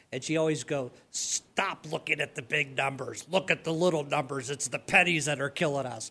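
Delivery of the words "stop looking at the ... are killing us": low, deep smoker's voice, cigarette in mouth. Quoting a former bookkeeper's advice, imitating the bookkeeper's deep voice. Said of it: "with the deep voice".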